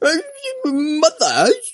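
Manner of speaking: put-on over-the-top British accent. Imitating a series' narrator: exaggerated British accent. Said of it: "la narradora es el acento británico más exagerado del mundo".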